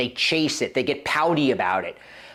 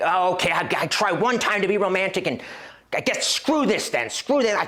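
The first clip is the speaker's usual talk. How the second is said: acted-out angry man ranting, blowing up, pitched up; 6 semitones higher than usual. Retelling a reaction after being turned down: imitating angry husband. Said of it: "go into full angry husband mode".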